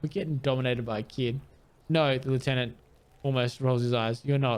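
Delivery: ordinary delivery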